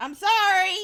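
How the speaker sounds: very loud, shrill, high-pitched, earnest tone. Apologizing again after being told to say it like you mean it: apologizing like you mean it. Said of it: "Say it like you mean it".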